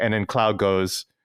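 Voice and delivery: normal talking voice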